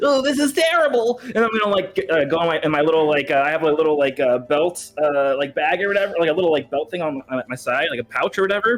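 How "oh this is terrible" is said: acted nervous, flustered panic in character. Acting out a character caught in a net, nervous in-character panic. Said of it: "the anime, like, sweat animation".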